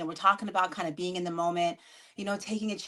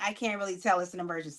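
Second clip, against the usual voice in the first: ordinary delivery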